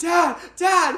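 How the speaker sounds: very high, loud, frantic yell. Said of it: "we're just yelling".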